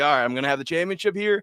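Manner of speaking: usual speaking voice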